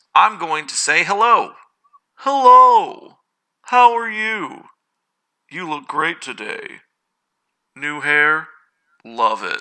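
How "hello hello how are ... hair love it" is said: bland, generic sing-song voice with "hello" stretched.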